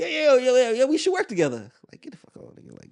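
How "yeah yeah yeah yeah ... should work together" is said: put-on very high, swooping, empty noncommittal tone.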